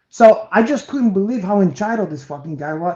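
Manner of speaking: usual speaking voice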